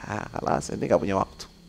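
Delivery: cold, hushed, soft, unvoiced whisper.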